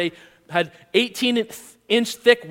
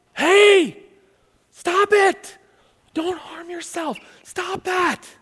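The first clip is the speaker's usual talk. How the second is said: drawn-out called-out cry, slow and pitched very high; 10 semitones higher than usual. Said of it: "He yelled, he shouted".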